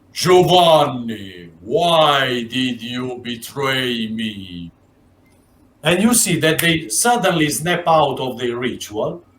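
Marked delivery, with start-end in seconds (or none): 0.1-4.7 very slow, drawn-out strange voice. Narrator voicing a voice heard throughout the room: booming voice. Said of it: "this voice booming in the room and saying".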